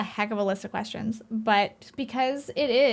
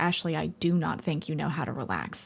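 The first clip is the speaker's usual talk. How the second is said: mock dead-serious tone, dropped low; 6 semitones lower, 3 dB quieter than usual. Speaker retells what their partner said to them while out: mock-serious voice. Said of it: "in the most serious voice ever".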